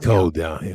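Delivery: southern accent, relaxed everyday speech. Asked to repeat a line after sounding southern; southern accent. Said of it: "Say that again".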